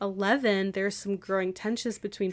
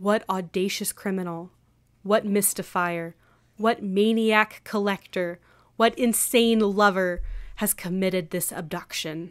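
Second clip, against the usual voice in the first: grand, stagey, dramatic, theatrical read-aloud voice. Asked to read the passage aloud one more time, giving it a dramatic reading. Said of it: "A dramatic reading".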